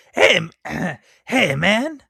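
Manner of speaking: very slow, loud, rough, stretched-out voice. Trying an impression after being asked for one: Cheech impression. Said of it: "Can you do a good Cheech impression?".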